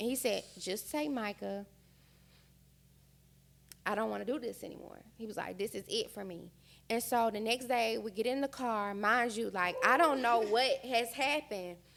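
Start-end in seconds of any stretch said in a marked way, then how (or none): 0.6-6.5 tearful voice, quieter.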